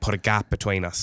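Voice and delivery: ordinary talk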